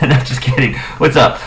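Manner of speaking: usual speaking voice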